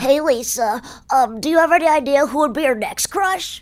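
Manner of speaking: geeky, nerdy animated cartoon boy voice. Asked to show the voice again, the speaker does the Milhouse voice. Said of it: "Remind me of its voice?".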